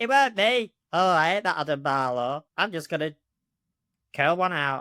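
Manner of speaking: talking dog character voice. Asked on the spot for an impression, doing the Davy the dog voice. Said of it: "do like an impression of Davy the dog".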